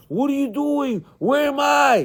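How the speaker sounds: mock screaming, high-pitched, with demanding cries. Retelling the screams heard from his wife: imitating someone screaming. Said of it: "I heard the screams".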